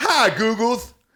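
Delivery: very high voice with US dialect accent.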